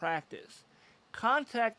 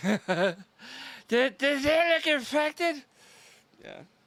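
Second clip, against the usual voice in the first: put-on play-acted very drunk man, sloppy, slurring, raised pitch; 6 semitones higher, 6 dB louder than usual. Acting out a really intoxicated man showing his butt to the doctor, imitating a really drunk man. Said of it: "my impression of someone who's really, really intoxicated".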